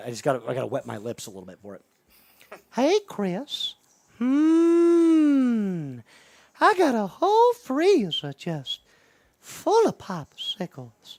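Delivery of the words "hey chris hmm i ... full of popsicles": very high, slow, creepy voice, stretched "hmm". Speaker does a bit addressing Chris, Herbert the Pervert voice. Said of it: "That's part of the impression".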